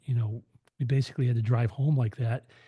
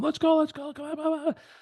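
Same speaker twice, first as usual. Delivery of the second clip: mock frantic, very high-pitched, hurried panicked voice. Retelling a story, the speaker quotes a frantic man: imitating a panicked guy. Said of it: "this guy is just freaking out".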